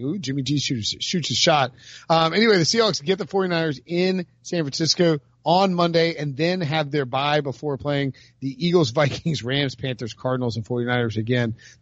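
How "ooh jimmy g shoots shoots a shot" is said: ordinary talk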